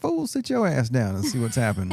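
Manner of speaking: ordinary delivery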